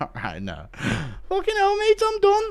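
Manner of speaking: very high, swooping, drawn-out, pained voice. Doing a bit where Darren Till tears his ACL, Darren Till impression. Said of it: "Impression of Till".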